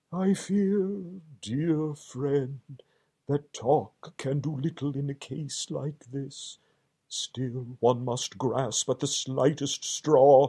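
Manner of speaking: faint, enfeebled, weak murmur. Lying still and flat, he answers his alarmed friend: weak murmur. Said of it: "He certainly lay very still and flat, and his voice was weaker, and his manner much changed. / murmured [name], / and his voice was weaker, / and his voice was weaker".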